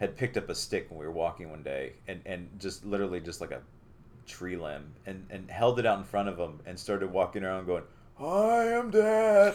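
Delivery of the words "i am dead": put-on old man voice, very high-pitched. Retelling a six-year-old walking around holding a stick out; talking like a 70-year-old. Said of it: "like talking like he's like 70 years old".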